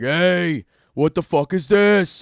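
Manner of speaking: put-on loud yelled New York accent, very slow, drawn out. Describing a megaphone guy in a video yelling at people, new york or new jersey accent. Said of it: "talks like some guy from like New York".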